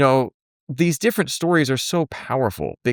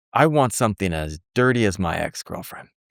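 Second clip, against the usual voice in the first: mock, flat deadpan delivery; 6 semitones lower than usual. Telling a story about a friend ordering a drink, retelling his deadpan line. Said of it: "my friend in this deadpan face said".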